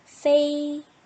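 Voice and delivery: 페이 held flat at high pitch, first tone. Reading a syllable with the first tone mark: 페이 in high level first tone. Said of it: "일성 발음을 한다면 페이".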